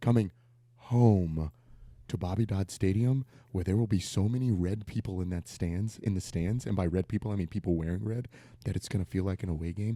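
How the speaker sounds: hushed whisper. Talking about a home game that will feel like an away game: whispering. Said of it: "Why are you whispering?".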